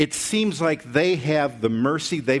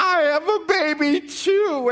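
play-acted very high, slow, drawn-out weepy crying. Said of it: "they start crying together".

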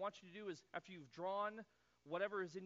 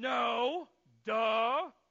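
very loud, pitched-up, put-on exasperated irritation; 5 semitones higher, 15 dB louder than usual. Retelling a disciple's reply to a voice from the shore: imitating an irritable reply. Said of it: "Peter just irritably turns".

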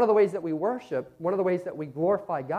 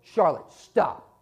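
play-acted, firm, stern, raised scolding yell; 4 dB louder than usual. Retelling punishing a little girl who tried to crack the phone, yelling sternly. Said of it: "I had to yell out with a real stern voice".

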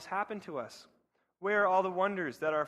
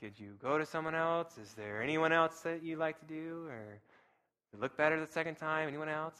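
gentle eye doctor patter; 2 semitones lower, 5 dB quieter than usual. Retelling a biblical figure's objection to God, slipping into an eye doctor voice. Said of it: "My eye doctor voice kicking in".

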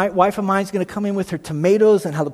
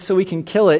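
plain

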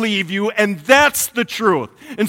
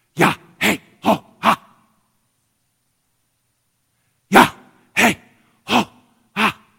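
breathy syllables said like breathing. Showing how the Hebrew name of God sounds: said like breathing. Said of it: "this is what it sounds like".

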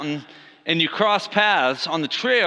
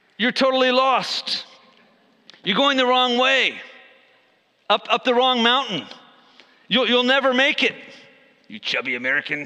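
put-on French accent, higher; 6 semitones higher than usual. Imagining being told off while lost on Swiss mountains, in a French accent. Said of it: "if I would have heard in a French accent".

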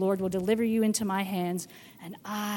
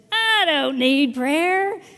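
acted very loud, very slow, offhand, joking flippancy; 7 semitones higher, 9 dB louder than usual. Retelling their answer to a caller offering to pray, retelling a flippant reply. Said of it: "And I very flippantly said".

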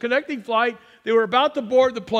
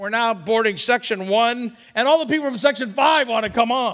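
ordinary delivery

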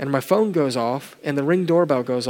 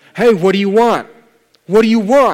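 raised, drawn-out call, voice pitched up; 6 semitones higher, 8 dB louder than usual. Retelling calling out to a man who ignores them, retelling raising voice. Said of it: "And I increase my voice".

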